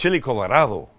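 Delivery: put-on Spanish accent on "chili Colorado". Trying the dish name again to sound better: put-on Spanish accent. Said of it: "Is that better?".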